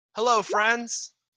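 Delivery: high, friendly, shouted, called-out delivery. Voicing a character calling out to kobolds: shouting a greeting. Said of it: "Ram is gonna shout out".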